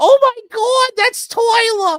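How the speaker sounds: very high, loud, sudden, shrill mother's cry. Acting out a mother recognizing her son in the news: imitating a mom. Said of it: "That's how a mom would totally do it".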